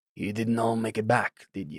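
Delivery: hushed, very quiet, soft voice. Voicing a character who notices companions missing: quiet voice. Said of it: "says with a quiet voice".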